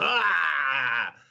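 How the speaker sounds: short, high-pitched dying wail.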